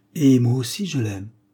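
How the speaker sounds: sighing, with a sigh. A young woman answering a question about a suitor, sighing. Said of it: "soupira la jeune fille".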